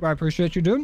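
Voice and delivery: talking around a mouthful, chewing. Streamer thanking a viewer for a membership, talking with candy in mouth. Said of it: "Sorry I have a Reese's in my mouth".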